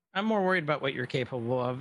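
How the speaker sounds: plain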